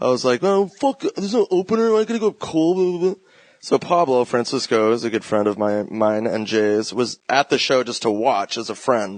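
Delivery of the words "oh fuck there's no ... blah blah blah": play-acted, high, babyish, bratty whining. Retelling a complaint about having no opener: imitating own babyish whining. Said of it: "a fucking baby".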